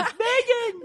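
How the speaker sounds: shrill, very high, thrilled shout. Retelling calling out a name in a meeting: imitating own excited shout. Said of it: "Too bad you can do my voice".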